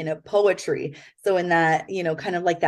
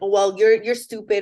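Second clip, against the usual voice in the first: put-on angry tone; 3 semitones higher, 4 dB louder than usual. Giving an example of how past thoughts came out: imitating own angry retort. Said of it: "say it in an angry way".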